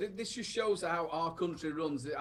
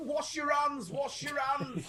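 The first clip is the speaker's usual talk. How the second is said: mock shouting, higher pitch; 10 semitones higher than usual. Imagining people in the street during the outbreak: imitating someone shouting. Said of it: "just shouting".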